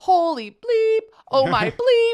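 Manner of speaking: mock very high, very loud, shrill, drawn-out panic scream. Retelling the audio of a bobsled ride: imitating Colin Jost screaming in a panic. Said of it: "he's just freaking out".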